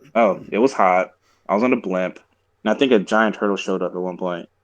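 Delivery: plain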